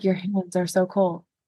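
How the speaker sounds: play-acted dead-level, unvaried flat monotone. Recapping a scene where Edward touches Bella's fingers, quoting Bella in a flat monotone. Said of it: "She does the monotone thing again".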